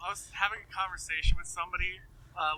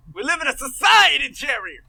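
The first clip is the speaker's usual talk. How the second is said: very loud, high, swooping belted outburst; 8 semitones higher, 12 dB louder than usual. Quoting the sitcom character who said the meme line: George Costanza voice. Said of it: "it's fucking George from Seinfeld".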